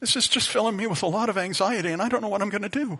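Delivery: feeble, weak, high little voice. Retelling what they said to a senior supervisor, in a weak voice. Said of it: "in kind of a weak voice".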